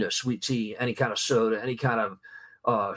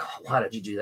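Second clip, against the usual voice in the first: put-on scolding man voice, much quieter; 4 dB quieter than usual. Speaker retells him snatching her sweet tea at dinner, imitating a man scolding. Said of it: "friend grabs tea, scolding".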